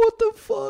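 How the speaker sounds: mock very high, upset, sobbing crying voice. Describing a scene where a man looks at a temple, imitating someone sobbing. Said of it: "he's sobbing and he's going".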